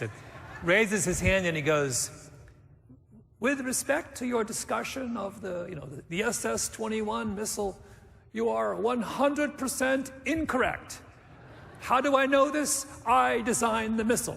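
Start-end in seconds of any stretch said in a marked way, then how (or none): 3.4-14.4 put-on German accent, pitched up. Retelling an audience member's question after a talk, in a german accent. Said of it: "still has the German accent".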